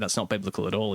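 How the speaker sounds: ordinary talk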